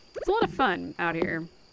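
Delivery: heavily ironic, dry sarcastic delivery. Describing how the whole town shuts down when it rains: sarcastic. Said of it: "I say sarcastically".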